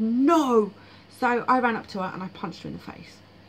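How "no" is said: loud shouted delivery. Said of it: "she just shouted".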